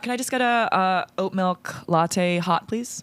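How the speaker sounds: slow, deliberate, put-on American accent. Ordering an oat milk latte in a coffee-shop role-play, American accent. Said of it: "I will talk in an American accent".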